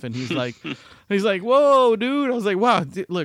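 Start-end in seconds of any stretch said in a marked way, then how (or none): 1.4-2.3 amused, laughing, loud high outburst. Speaker retells almost knocking a man over in a crowd; imitating someone laughing. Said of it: "and he was laughing".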